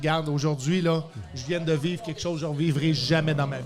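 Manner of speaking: ordinary talk, nothing marked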